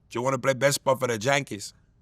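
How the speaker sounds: fast, put-on Spanish accent.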